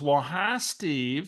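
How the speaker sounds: put-on woman's caller voice, for effect. Retelling a phone call from Barbara, imitating Barbara's voice. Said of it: "I got to use her voice for effect".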